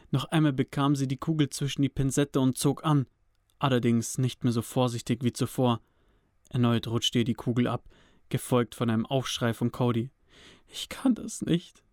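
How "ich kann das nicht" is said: soft, hushed whisper, quietly under the breath. A woman tending Cody, who is in pain, speaks: whispered quietly. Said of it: "flüsterte sie leise".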